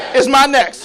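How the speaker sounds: fired-up, enthusiastic. Repeating a line back after being asked for passion and enthusiasm. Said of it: "Say it with passion and enthusiasm".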